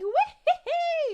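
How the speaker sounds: shrill, very loud, high cartoonish whoop. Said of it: "listening to Mario's voice, like".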